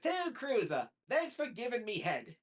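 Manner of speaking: high cartoon voice, rising pitch, Australian accent. Retelling what he said while signing an autograph: imitating Rocko's Australian voice. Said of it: "he says it in the voice and also with the, the Aus-, w-, with the Australian dialogue".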